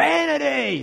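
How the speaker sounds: put-on high-pitched, grumpy old man voice, screaming.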